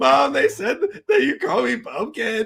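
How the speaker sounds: put-on tearful wail, pitched very high, crying. Retelling coming home from kindergarten upset to mom: imitating own past crying. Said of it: "And I get home and I'm, like, crying".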